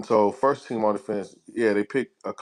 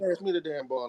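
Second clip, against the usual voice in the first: put-on joyful voice, higher and quieter; 6 semitones higher, 8 dB quieter than usual. Quoting a player asking for the ball after hitting a three: imitating joyful Ron Artest. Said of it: "He was joyful".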